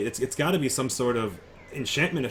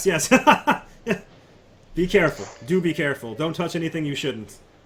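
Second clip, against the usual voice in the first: chuckling, laughing through the words; 4 semitones higher, 3 dB louder than usual. Game master voices Zane answering a player in a wizard's workshop, Zane laughing while talking. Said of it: "And Zane laughs".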